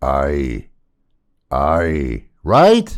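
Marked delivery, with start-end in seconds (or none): 0.0-2.2 low pirate voice on the word "aye". Showing off a pirate impression for Halloween: pirate voice on aye. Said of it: "I do a real good impression of a pirate".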